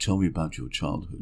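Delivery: deliberately seductive, put-on sexy voice. Retelling what a therapist asked: put-on sexy voice. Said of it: "You're doing your sexy voice".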